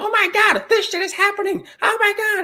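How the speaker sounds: very high, frantic, comic shrieking voice. Describing a comic relief character who screams all the time, imitating a screaming comic-relief character. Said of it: "like he's talking like this".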